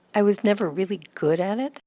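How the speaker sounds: never and good emphasized. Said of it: "I can still give more volume to the adjective good".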